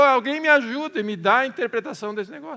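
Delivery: trembling, high, loud, fast panicked shout. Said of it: "ficou nervoso e gritou".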